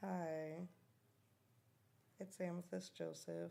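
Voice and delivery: tired, sleepy voice. Introducing oneself at the start while admitting to being sleepy, in a tired voice. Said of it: "I know I sound really tired".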